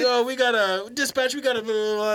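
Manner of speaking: put-on high child cop voice.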